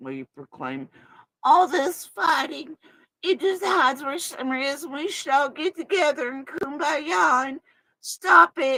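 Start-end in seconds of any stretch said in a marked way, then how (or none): 1.4-8.8 put-on high, loud babyish talk. Asking a question aloud in a baby voice. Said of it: "The baby voice that she makes".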